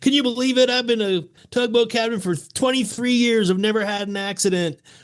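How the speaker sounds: put-on very high, boastful drunken yell. Retelling a drunk tugboat captain yelling to a whole bar, imitating Captain Clark yelling. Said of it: "he was yelling to the whole bar".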